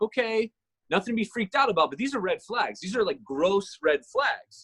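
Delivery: ordinary delivery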